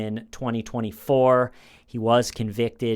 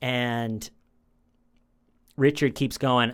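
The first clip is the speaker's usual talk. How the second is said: plain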